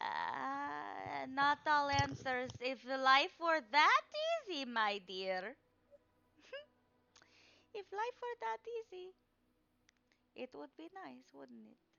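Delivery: slow, drawn-out, mystic fortune-teller voice. A game master voices the card reader answering the players, card-reader character voice. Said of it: "And she's kind of staring at the cards. / My Curse of Strahd: Barovian Daze players get their Tarokka cards read by [name]".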